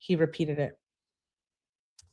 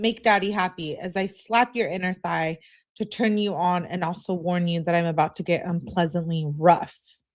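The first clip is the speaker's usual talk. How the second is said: usual speaking voice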